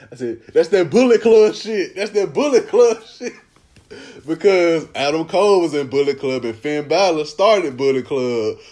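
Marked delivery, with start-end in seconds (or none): 0.5-3.4 screaming, pitched high. Retelling a reaction to a wrestling show: imitating own screaming at the tv. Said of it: "I'm screaming at the T V".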